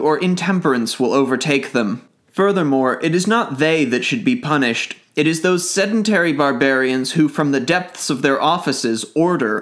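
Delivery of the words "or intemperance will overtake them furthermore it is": plain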